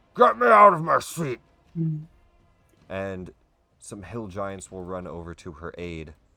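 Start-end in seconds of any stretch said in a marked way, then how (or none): 0.2-1.4 very loud, very high, booming giant's bellow. Something stuck in its chair calls out for help, loud booming voice. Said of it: "a loud, booming voice".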